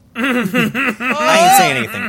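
laughing through the words, high and loud.

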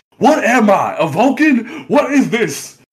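very high, very slow, drawn-out ranting.

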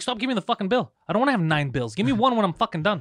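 mock furious loud rant. Retelling complaining to a waiter about the bill: imitating himself super pissed. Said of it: "I would get super pissed".

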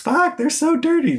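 play-acted, very high, shrill, piercing shriek. Speaker describing a student's reaction in a video, retelling a scream. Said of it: "right when she screams".

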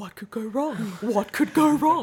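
acted-out hushed whispering. Retelling what the two of them whispered to each other, a retold whisper.

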